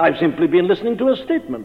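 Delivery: plain reading voice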